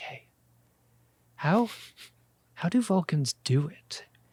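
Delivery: hushed whisper. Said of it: "he lowers his voice a little bit".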